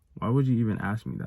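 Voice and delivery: ordinary talk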